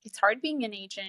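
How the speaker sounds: usual speaking voice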